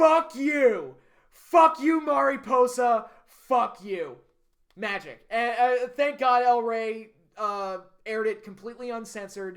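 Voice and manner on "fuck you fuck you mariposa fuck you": slow, loud, bellowed and drawn-out yell. Retelling a locked-in submission moment yelled into the microphone: imitating someone yelling. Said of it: "she just yells into the microphone".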